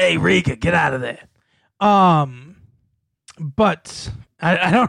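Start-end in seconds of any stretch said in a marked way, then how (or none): 0.0-1.2 rough, creaky character voice. Answering a request for a Danny DeVito impression from the Taxi years. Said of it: "your Mister DeVito impression?".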